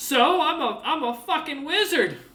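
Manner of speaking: very high, loud talking-bear voice. Voicing a bear looking at a player: voicing a talking bear. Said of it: "Looks over at you, goes".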